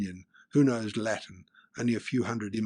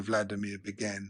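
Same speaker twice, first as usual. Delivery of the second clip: ordinary delivery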